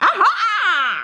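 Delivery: very high, shrill, drawn-out mocking jeer, witch voice. The witch faces the king's son as he climbs up, mocking cry. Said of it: "cried she, mocking him".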